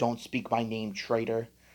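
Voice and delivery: ordinary talk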